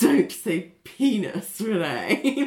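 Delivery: very slow, appalled, prim, disgusted reproachful tone. Retelling how Ali told Renee not to say a word, imitating Ali's disgust. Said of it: "the way she says that is, like, so disgusted".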